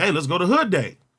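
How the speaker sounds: usual speaking voice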